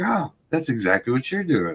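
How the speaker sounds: put-on sarcastic tone. Retelling own remark to a kid selling shirts in church: imitating own sarcastic remark. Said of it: "I was being sarcastic as shit".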